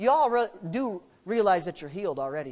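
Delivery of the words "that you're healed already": ordinary talk, nothing marked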